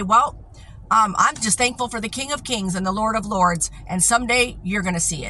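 normal talking voice

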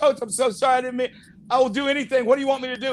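acted-out crying, tearful and desperate. Retelling how a crying player apologized to his coach: imitating a crying player.

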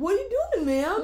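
put-on very high, shrill, loud, irritating young man's voice. Retelling what a guy said, imitating a guy's annoying voice. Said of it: "his annoying voice".

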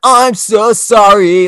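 high, loud, slow whiny wail, man's voice.

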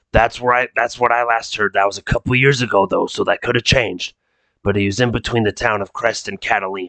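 ominous, sinister smoker's voice. Voicing a client asking players to find a missing person: ominous smoker's voice. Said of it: "He just sounds ominous 'cause the way he talks".

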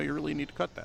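quiet, low-key, plain matter-of-fact delivery. Imitating how he would say to cut a scene: imitating a matter-of-fact man. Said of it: "really kind of low key too... it's matter of fact".

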